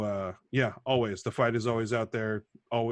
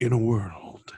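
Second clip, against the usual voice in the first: trailer-style TV announcer voice; 6 dB louder than usual. Showing the voice after a mock safety announcement: TV announcer voice. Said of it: "I can kinda do the voice".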